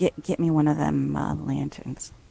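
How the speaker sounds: hushed, quiet half-whisper. As a narrator voicing her line to another character, half-whisper. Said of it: "she whispers to William".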